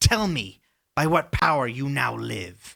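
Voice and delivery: loud, half-yelled, direct yelling. A game master plays a character addressing the revived adventurers; yelling. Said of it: "she yells kind of at you".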